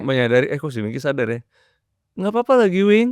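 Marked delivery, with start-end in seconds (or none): 2.2-3.1 overly cheerful, very high, rising on nggak papa. Pointing out the intonation of a sample reply, rising pitch. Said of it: "naik tuh kan nadanya, intonasi".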